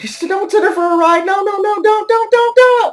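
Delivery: very high, frantic, out-of-control panic. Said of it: "going ape shit and sitting there going".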